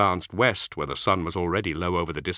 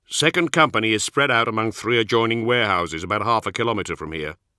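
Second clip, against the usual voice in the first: plain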